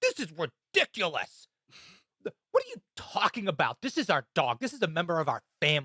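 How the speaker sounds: play-acted, belligerent, swooping angry outburst. Speaker retells a man told he can't bring his dog in, imitating an angry belligerent man. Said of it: "This guy got belligerent and angry".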